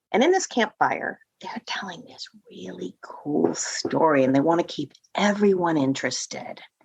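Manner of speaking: hushed whisper. Explaining how to tell a story around a campfire: whispering. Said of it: "she's whispering".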